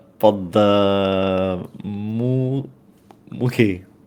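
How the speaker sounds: very slow, drawn-out, stretched delivery. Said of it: "Abbas just goes".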